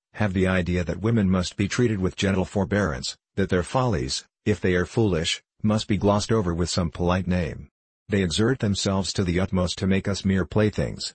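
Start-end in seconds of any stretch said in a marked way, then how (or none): none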